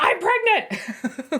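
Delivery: high, playful play-shouted yell. Giving an example of telling the table what's going on; mock yelling. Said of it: "or just yelling".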